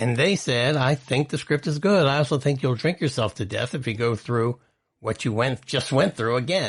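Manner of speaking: plain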